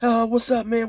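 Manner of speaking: high, stuttering, spooked, caught-off-guard put-on stammer. Retelling how a spooked man answered: imitating someone stuttering and stammering. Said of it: "this dude is stuttering and stammering".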